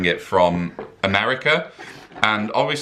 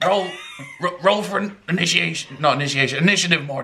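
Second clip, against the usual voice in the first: very high, stammering, stuttering cartoon voice; 9 semitones higher than usual. Speaker vows to keep the impression going all night: Rick impression. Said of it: "I'm going to do this impression all night".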